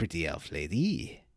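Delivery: put-on suave flirtatious voice with a Spanish accent. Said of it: "I can't really do the Antonio Banderas style voice".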